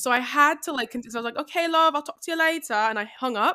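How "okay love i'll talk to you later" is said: high-pitched, put-on British accent. Retelling ending a phone call while pretending to be british, in a fake british accent. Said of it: "I was talking to her in a British accent".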